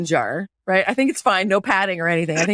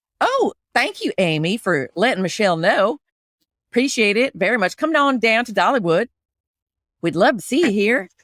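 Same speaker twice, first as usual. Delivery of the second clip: put-on Southern country accent. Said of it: "her voice is higher".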